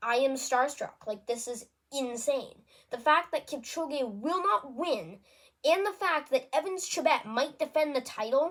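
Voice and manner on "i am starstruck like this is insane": ordinary talk, nothing marked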